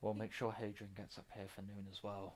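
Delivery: hushed, very quiet half-whisper. Voicing a guard who half-whispers a promise to the others: guard half-whispering. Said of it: "as you hear the whisper from one of the guards saying".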